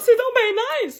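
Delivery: overexcited, starstruck, gushing voice. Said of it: "comme pour lui dire".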